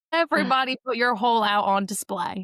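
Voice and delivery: put-on slow, drawn-out Southern accent. Retelling a friend's game at the table: imitating Jenna's Southern accent. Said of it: "Jenna just started immediately talking in a Southern accent".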